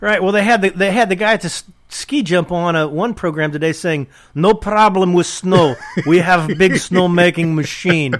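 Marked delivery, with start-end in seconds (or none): 4.3-8.2 put-on Russian accent. Quoting the ski-jump guy from a program, in a fake Russian accent. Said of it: "I'm proud of my Russian fake accent".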